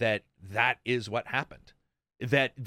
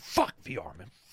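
slow, seething, angry mutter. Imagining Phil rocking back and forth at night, imitating Phil angrily muttering. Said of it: "just angry, like, you know, like a Wolverine".

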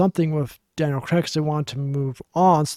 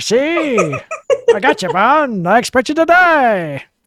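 very high, loud 1950s gangster voice, "die" stretched out; 9 semitones higher, 7 dB louder than usual. Pitching to be the next Bond villain, speaker uses a 1950s gangster voice. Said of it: "Like a 1950s like gangster".

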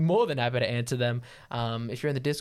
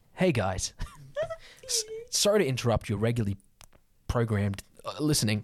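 fake commercial announcer voice. Teasing another speaker for sounding like an ad, in a Spotify ad voice. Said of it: "You sound like a Spotify ad".

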